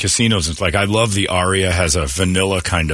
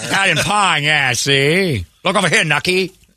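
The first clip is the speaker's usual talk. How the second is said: put-on 1930s mobster voice, higher pitch; 9 semitones higher than usual. Echoing a line from a news story: imitating a thirties gangster voice. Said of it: "Said as a thirties gangster".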